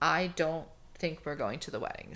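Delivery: ordinary delivery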